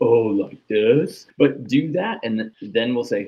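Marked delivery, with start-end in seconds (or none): 0.0-1.3 loud, exaggerated put-on sarcastic tone, somewhat obnoxious. Acting out an athlete exaggerating a coach's correction: put-on sarcastic tone. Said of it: "you seem like you're being sarcastic".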